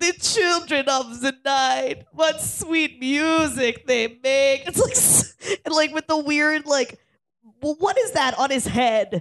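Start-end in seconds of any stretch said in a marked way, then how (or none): 0.0-4.7 slow, deliberate, drawn out, each word separate. Recalling a favorite movie scene: Gary Oldman as Dracula impression. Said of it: "fucking Gary Oldman, like".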